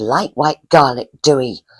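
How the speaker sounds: put-on Cornwall accent. Retelling what a gravedigger said in a graveyard: imitating a Cornish accent. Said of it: "in a real Cornish accent".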